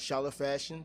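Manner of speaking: ordinary delivery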